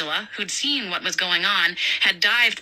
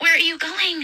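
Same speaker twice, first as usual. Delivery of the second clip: whispered, much higher pitch; 10 semitones higher than usual. A woman asks her companion who is about to leave, whispering. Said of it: "Angela whispered".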